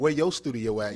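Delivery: ordinary delivery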